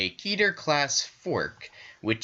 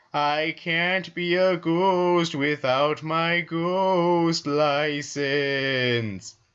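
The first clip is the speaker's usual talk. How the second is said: spooky ghost voice, pitched up; 7 semitones higher, 4 dB louder than usual. Reading aloud a log where a sign speaks: stereotypical ghost voice. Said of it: "only speaks in the stereotypical ghost accent".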